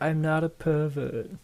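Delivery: acted-out yell, high and drawn out. Retelling a movie scene where a dad is called a pervert: imitating a movie character yelling. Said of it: "he just yells that out".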